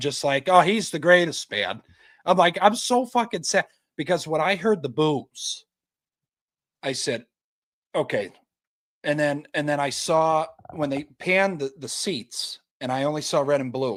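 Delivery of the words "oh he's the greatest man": loud, lackadaisical, sarcastic tone. Retelling own sarcastic reaction to watching a Josh touchdown: mock-sarcastic praise. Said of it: "sarcastic I've been watching a Steelers game".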